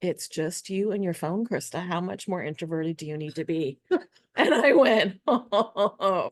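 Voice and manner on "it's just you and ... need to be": dry, totally flat, unmoved monotone. Quoting the course teacher's answer to her question, retelling a deadpan reply. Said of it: "she just totally deadpans and says".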